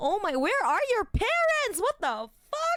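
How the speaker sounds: stunned, shocked outburst at very high pitch. Retelling own past reaction by quoting self: retelling a shocked reaction. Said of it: "I was so shocked".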